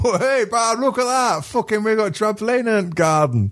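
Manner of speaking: put-on very high, heavy, strong northern English accent. Retelling a TikTok of a trampoline landing in someone's garden: put-on northern voice. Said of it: "the steep northern voice going".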